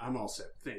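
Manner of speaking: gruff put-on voice. A character declines an offer of tea: gruffer Dave voice. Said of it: "He's got a gruffer voice".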